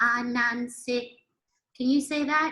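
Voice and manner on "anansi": Anansi held on one even pitch. Language lesson on tones, a neutral word: all syllables of Anansi level. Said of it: "So this one is neutral. It's all the same sound".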